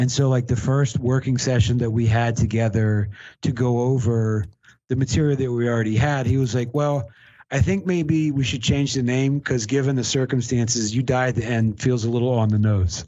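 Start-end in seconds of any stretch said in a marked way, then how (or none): none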